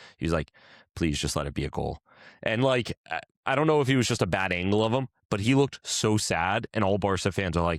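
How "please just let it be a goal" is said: lower-pitched, pleading whisper. Retelling a player's words while a goal was reviewed: imitating Ferran Torres whispering under his breath. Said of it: "whispered under his breath".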